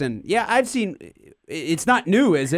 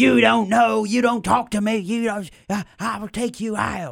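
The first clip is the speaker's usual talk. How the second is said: put-on raspy, high-pitched crazy old woman voice; 5 semitones higher than usual. Retelling a sports radio caller's threat: imitating a raspy-voiced crazy old woman. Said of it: "some crazy old woman going".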